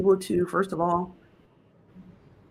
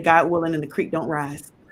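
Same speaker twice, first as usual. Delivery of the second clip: ordinary talk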